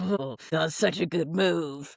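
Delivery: brooding, stewing evil villain voice. Retelling how Joe reacted to a rival's move: imitating Joe stewing in his evil lair. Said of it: "in his, like, evil lair".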